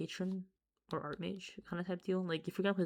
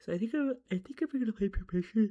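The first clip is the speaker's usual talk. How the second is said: talking right through a loud yawn mid-sentence; 4 semitones higher, 6 dB louder than usual. Recording a card deck video at four a.m., yawning while talking. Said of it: "sorry for yawning".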